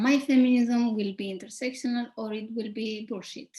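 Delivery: ordinary delivery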